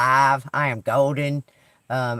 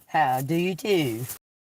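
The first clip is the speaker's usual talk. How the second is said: put-on southern English British accent; 2 semitones higher, 3 dB quieter than usual. Greeting listeners after naming the Light and Love Collective: southern British accent. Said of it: "Using my British accent, my southern British accent today".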